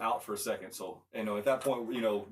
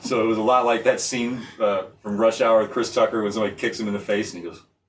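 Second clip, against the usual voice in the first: ordinary delivery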